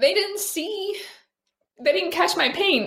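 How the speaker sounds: crying while talking. Speaker talking about hurtful comments from viewers, crying while talking. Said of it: "Why am I crying so much?".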